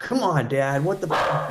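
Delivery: mouthy, overconfident teenager voice with bad attitude. Voicing what his dog would say, as an overly confident teenager with a bad attitude. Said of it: "kinda like an overly confident teenager".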